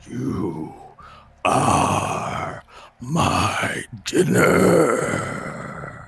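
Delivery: very loud, booming, drawn-out, very slow monster voice. Voicing a creature speaking into a player's head: monster's voice in your head. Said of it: "you hear a voice into your, into your head that says".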